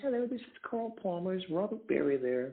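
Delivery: high-pitched voice. Recalling a phone call in the recording studio, retelling a caller's high voice. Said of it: "this guy in a high voice says".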